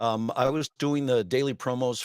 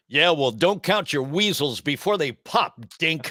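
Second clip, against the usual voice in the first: loud, big, pitched-up cartoon hero voice; 5 semitones higher, 5 dB louder than usual. Quoting a favorite line from the nineties show in a Tick impersonation. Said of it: "doing the Tick impersonation".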